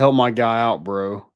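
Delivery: ordinary delivery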